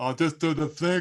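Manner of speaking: put-on demented, crazed-sounding voice. Recalling an actor's line from a film: demented Russell Crowe impression. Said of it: "He sounded like he was demented".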